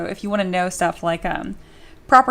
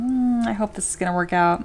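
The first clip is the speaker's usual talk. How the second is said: unclear mumbling to oneself. Someone mumbling as they sculpt, hoping it works out, mumbling. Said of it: "you're just kind of like mumbling as you sculpt".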